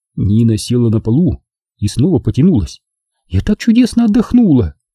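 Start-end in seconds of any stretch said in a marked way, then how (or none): 3.3-4.7 bright, delighted, very high joyful cry. Nina, stretching on the floor, speaks to the narrator: joyful exclamation. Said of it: "радостно воскликнула она".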